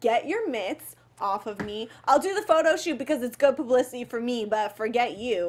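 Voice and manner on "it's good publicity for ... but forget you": ordinary talk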